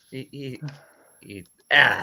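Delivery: very slow, catching, choked-up stammer, thick with emotion. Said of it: "now I'm getting choked up".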